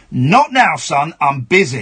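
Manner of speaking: very slow, angry, drawn-out delivery. Retelling snapping at his son while arguing online: imitating his own angry reply. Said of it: "angrily I went".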